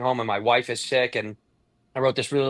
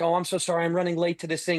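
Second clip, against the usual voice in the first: sweet, polite, gentle voice, pitched up; 5 semitones higher than usual. Speaker retells a man apologizing to a cop, imitating sweet grandma-talk voice. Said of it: "how you talk to your grandma voice".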